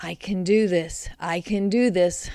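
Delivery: murmuring. Narrator repeats a mantra while climbing down ladders: murmured. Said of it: "I murmured".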